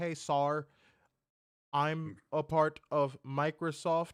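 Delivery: slow, salesy pitchman voice. Mocking what a phone scam caller says on the line: imitating a scam caller. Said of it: "all you gonna do is say".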